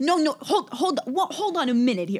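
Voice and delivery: loud, gruff East Coast yelling. Imitating Josh when he gets worked up: Josh's gruff East Coast voice. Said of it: "it gets this really, like, gruff".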